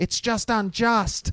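very high-pitched, shrill shouted yell. Retelling a famous line from the sister, Mercedes: imitating Mercedes yelling. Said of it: "where she yelled that".

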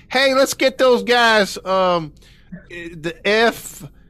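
imitated Southern accent. Retelling what a law enforcement officer said: imitating a Southern accent. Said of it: "one guy that had a Southern accent".

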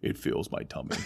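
deep, breathy, hushed voice. Showing how going deeper turns the voice into Bane, deeper Bane voice. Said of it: "if I just go deeper".

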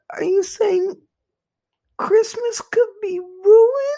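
put-on shrill, very high, very loud child crying. Reacting to news that deliveries are backed up before christmas, in a mock little-kid crying voice. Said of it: "I tried to do like a little kid cry".

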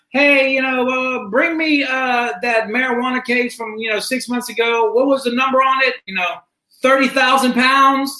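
high put-on shouting. Retelling an attorney yelling at his secretary: imitating Kent yelling. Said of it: "he starts yelling at his secretary".

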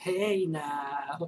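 smart-aleck tone with the word now drawn out. Retelling what the talking Scarecrow says in a horror movie: wise-ass Scarecrow voice. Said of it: "a wise ass".

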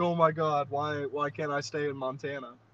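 sobbing, crying, whining. Mocking someone unprepared for the snow, imitating someone crying. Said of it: "and then you're crying like".

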